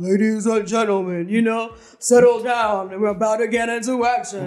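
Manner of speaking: deep man's voice impression. Describing how a man addresses the audience, imitating a deep male voice. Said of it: "Because it's deep".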